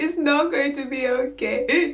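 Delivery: slow, tearful, drawn-out words through crying. Retelling answering someone who comforts her: imitating her own crying. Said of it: "She's actually crying, crying".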